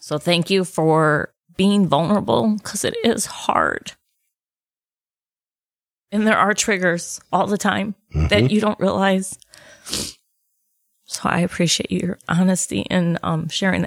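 crying while speaking. Podcast host thanking someone for sharing a personal post, tearful. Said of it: "let me wipe my tears off my eyes because I felt every word".

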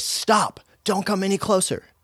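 very high, very loud, forceful shout. Retelling what self-defense trainees said when approached: imitating a very loud command. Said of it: "they would very loudly say".

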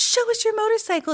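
very high, squeaky little pleading voices. Little cousins crowd around a relative who has a motorcycle, squeaked. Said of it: "they squeaked".

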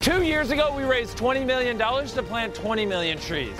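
very high, hard, shouted voice. Retelling what a caller named Jimmy said: imitating Jimmy shouting. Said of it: "there's no need to shout".

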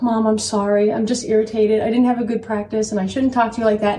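ordinary delivery

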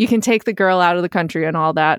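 ordinary talk

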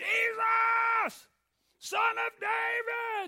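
very high, drawn-out scream at the top of the lungs. Retelling a man crying out to Jesus for mercy: retelling a full-voice scream. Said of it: "scream at his loudest voice".

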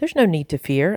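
plain

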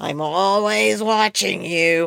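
hoarse, slow, creaky, lizardy monster drawl. Describing a hoarse voice by quoting a monster: Roz from Monsters, Inc. voice. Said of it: "Roz, the lizardy looking monster ... she would say".

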